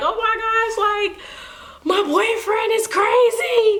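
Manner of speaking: mock very high, tearful, sobbing voice. Retelling what was said about a boyfriend back then: imitating own past crying. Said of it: "I was just crying like".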